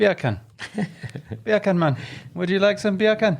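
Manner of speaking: put-on Jamaican accent, pitched very high. Teaching someone to say a phrase, in a Jamaican accent. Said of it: "say bacon with a Jamaican accent".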